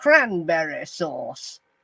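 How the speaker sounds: put-on posh British accent, swooping pitch. Imitating how a man says these words, in a posh accent. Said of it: "with a posh accent".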